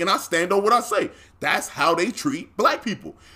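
ordinary talk

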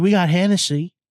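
casual, low-key, toned-down delivery. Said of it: "She was like".

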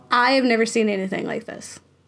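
plain

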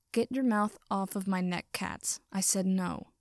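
ordinary delivery, nothing marked

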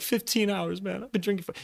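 tearful, high-pitched voice, talking through tears. Retelling telling a police officer how long he'd been drinking: retelling own tearful words. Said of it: "tearing up, crying and shit".

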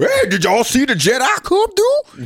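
very high voice, swooping pitch, drawn-out words. Imitating how Jar Jar Binks talks: Jar Jar Binks voice. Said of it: "What he be coming up like".

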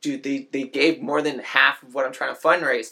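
plain

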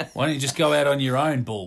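put-on sarcastic, taunting tone. Imagining someone taunting a man who failed to become a cop: mock-sarcastic taunt. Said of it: "someone sarcastically said to him".

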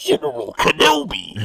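very high, creaky, rough movie villain rasp. Trying out top Star Wars impersonations: a Star Wars character impression. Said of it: "top 5 impersonations from Star Wars".

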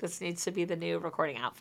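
ordinary talk

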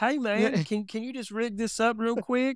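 put-on country accent, very high-pitched. Brainstorming voices with others, speaker tries out a country voice. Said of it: "A country voice might be different".

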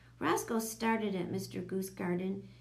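ordinary delivery

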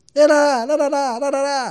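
high, loud mock yelling, accusing tone. Retelling the governor yelling as Bruno approached: imitating Serra shouting. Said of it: "ele gritando".

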